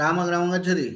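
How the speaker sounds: words run together in one phrase, no pauses. Sanskrit lesson, showing a sentence said so quickly the gaps vanish: rushed together quickly. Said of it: "इतनी जल्दी से बोल दिया".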